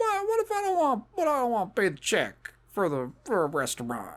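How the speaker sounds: high put-on voice with swooping pitch. Responding to a feminist film in a put-on voice: Bill Cosby voice. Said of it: "That's what he sounds like to me".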